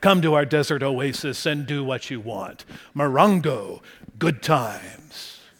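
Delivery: luring, sweet-toned, seductive siren-like voice. Speaker imitating the voiceover from a casino commercial, seductive Morongo commercial voice. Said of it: "seductive, siren-like voice in his dulcet tones".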